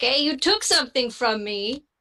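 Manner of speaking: mildly irritated, kind of annoyed complaining. Tabletop game player voices a character's reaction: kind of annoyed. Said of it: "he's gonna be kind of annoyed".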